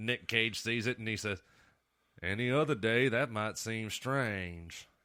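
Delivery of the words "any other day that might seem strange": bad put-on Alabama accent. Quoting a movie line as Nicolas Cage says it: Nicolas Cage's Alabama accent. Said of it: "shitty, shitty Alabama accent".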